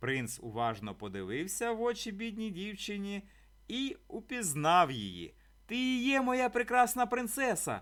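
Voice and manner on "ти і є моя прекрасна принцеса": glad, ringing, high-pitched cry of delight. The prince recognizes the poor girl and exclaims to her, joyful exclamation. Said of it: "радісно вигукнув він".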